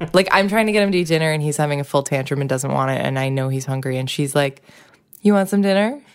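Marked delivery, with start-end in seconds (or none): 5.2-6.0 bright, cheerful, pitched-up delivery. Retelling a child teasing her brother mid-meltdown: imitating a child, cheerfully. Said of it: "she'll say things to him just real cheerfully".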